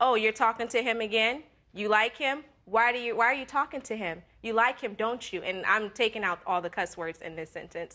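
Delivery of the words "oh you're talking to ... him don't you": put-on loud talking. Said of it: "he's still saying this loud".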